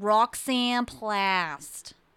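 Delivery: animated-film receptionist voice, "Plast" drawn out. Retelling a phone call, speaker voices a woman giving a name, like the girl from Monsters, Inc. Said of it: "she's kind of sounding like that girl from Monsters, Inc".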